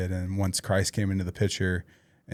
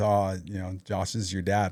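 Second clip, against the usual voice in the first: imitated laughing voice. Retelling what a classmate said about a newspaper picture: imitating a laughing classmate. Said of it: "he laughs".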